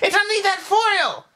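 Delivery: very high, pressing, insistent shout. In a comedy skit, arguing with a chocolate santa, insistent shout. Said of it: "skit argument, shouting at chocolate Santa".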